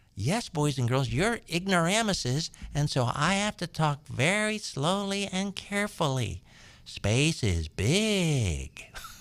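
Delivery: put-on condescending teacher tone.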